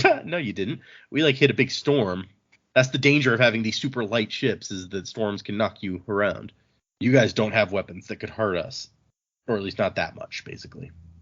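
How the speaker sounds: usual speaking voice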